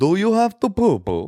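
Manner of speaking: heavy, laid-on fake Russian accent, high-pitched. Showing another speaker how the line should go, in a Russian accent. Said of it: "I would say it would go like this".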